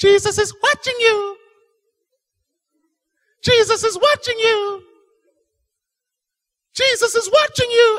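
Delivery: very high, shrill, piercing parrot screech. Telling a story, a voice in a dark house suddenly calls out, high-pitched and piercing. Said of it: "this high-pitched, piercing voice".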